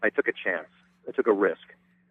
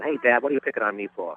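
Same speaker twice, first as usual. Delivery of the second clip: put-on youthful, young, high-voiced New York voice; 2 semitones higher than usual. Showing a selection of voices, starting with young Groucho Marx voice. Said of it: "I kinda played him kind of young".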